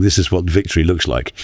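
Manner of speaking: ordinary talk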